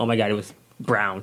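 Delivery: ordinary talk, nothing marked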